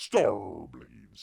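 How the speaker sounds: loud put-on pirate accent. Speaker saying a title the pirate way: put-on pirate accent. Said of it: "I say it with kind of a uh, pirate accent".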